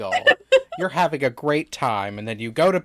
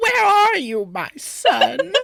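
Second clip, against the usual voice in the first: put-on silly, very high, slow old lady voice. Speaker acts out how she imagined a line in her head, in an old lady voice. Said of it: "on like old lady voice".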